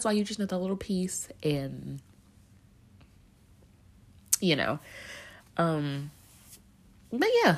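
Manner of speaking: tearful, crying while speaking. Talking to the audience while emotional, crying. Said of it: "Sorry for crying".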